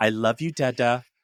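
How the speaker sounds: put-on sweet, sugary child voice. Retelling a bedtime goodnight, imitating Hannah's sticky-sweet voice. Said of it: "sticky sweet vibe".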